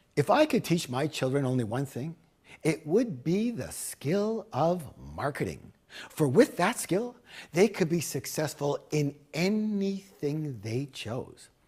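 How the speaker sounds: ordinary talk, nothing marked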